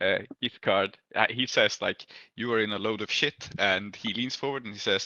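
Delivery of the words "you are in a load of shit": normal talking voice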